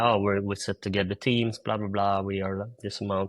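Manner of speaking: ordinary talk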